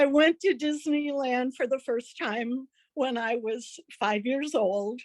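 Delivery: voice catching, choked up, close to crying. Beginning a speech to an audience: close to tears. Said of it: "now I'm going to cry".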